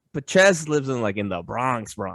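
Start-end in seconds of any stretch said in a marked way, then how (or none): 1.1-2.1 second "Bronx" said with a sneer. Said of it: "you say the second Bronx with, like, a sneer".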